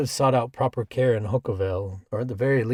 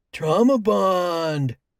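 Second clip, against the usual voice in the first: high-pitched, loud, playful joking voice, "bond" drawn out; 7 semitones higher, 5 dB louder than usual. Reading a character's joke after a friend's remark: high-pitched voice. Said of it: "Grant joked in a high-pitched voice".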